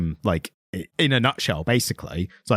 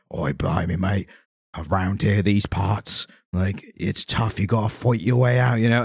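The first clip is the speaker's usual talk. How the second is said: exaggerated, heavily laid-on fake Cockney accent; 3 semitones lower than usual. Speaker mocks a British actor's over-the-top accent: imitating Stephen Graham's cockney. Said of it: "Americans doing Jason Statham impressions".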